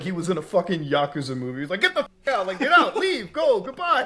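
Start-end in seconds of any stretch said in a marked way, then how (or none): 1.8-4.1 mock very high, shrill, furious screaming. Retelling a man in a clip screaming at someone, screaming. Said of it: "that guy was screaming at him".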